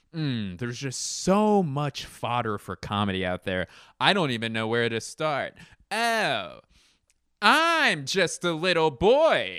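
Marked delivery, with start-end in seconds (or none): 5.9-9.6 high, very slow, loud, swooping sing-song. Riffing on comedy material, the speaker launches into a John Mulaney impression. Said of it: "That's my John Mulaney impression".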